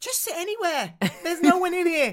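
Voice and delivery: put-on loud voice. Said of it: "wasn't watching the, the v-, volume of my voice".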